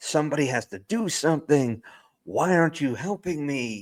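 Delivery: high, held-back yell. Describing a scene where an arrested senator begs for help, retelling his yell. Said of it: "And like he's yelling".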